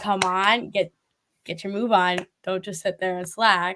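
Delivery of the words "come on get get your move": plain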